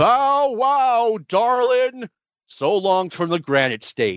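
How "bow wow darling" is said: very high, comic dog character voice. Leaving at the end of the podcast, sign off with an impersonation of Austin Idol's dog. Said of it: "doing an impersonation of Austin Idol's dog".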